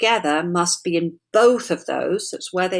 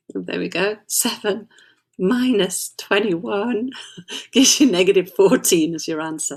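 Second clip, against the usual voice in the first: talking through giggles, laughing between words. Working a maths problem aloud and reaching the answer, giggling while talking. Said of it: "I'm just giggling".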